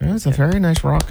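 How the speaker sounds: very high put-on Irish accent, up-and-down lilt. Asked for their best Irish accent, the speaker demonstrates one, in an Irish accent. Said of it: "Give us your best Irish accent".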